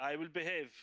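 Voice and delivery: announcing manner, declaring it publicly. Voicing a character who announces to everyone: saying loudly. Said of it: "I say loudly to everyone".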